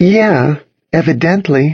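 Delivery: taunting, mocking tone. Narrator reads Cassidy echoing the narrator's word back, mocking. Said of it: "mocking me".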